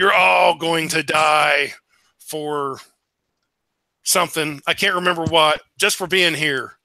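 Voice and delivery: big, booming voice. Game master voices a being speaking from the middle of a fire: big booming voice. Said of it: "a big booming voice comes out of the middle of the fire".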